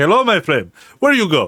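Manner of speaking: put-on, swooping Nigerian accent. Imagining greeting passengers as a taxi driver: put-on Nigerian accent. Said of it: "I'm gonna have to put on the voice".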